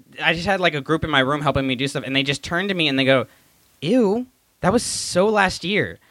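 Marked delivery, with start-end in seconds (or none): 3.8-5.9 put-on high, slow mean-girl put-down, movie style. Retelling what students said to a try-hard joke: Mean Girls voice. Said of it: "it was literally out of Mean Girls".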